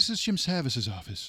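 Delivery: put-on Irish-accented speech. Retelling calling Jim Savis and his assistant picking up: Peggy Medina's Irish accent. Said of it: "she had this great Irish accent".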